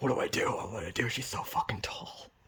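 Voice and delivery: frightened little hushed whisper. Retelling being scared in a dream when a bouncer flirted: imitating own whisper.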